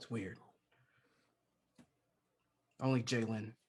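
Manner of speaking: whispering in character voice. Speaking in character privately to Doc after a calming touch: whispering. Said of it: "I would be whispering that to Doc".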